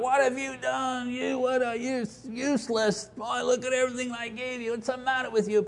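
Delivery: high-pitched, screaming, ranting harangue. Contrasting what God did not do, mock screaming at Adam. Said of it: "it doesn't say God screamed out".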